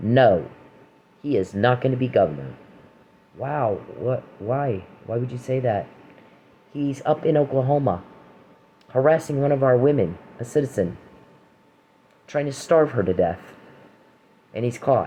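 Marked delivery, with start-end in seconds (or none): 0.0-2.5 put-on firm, unbending, emphatic, adamant delivery. Retelling how someone answered about being governor: imitating a firm, adamant refusal. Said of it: "very firmly, very adamantly".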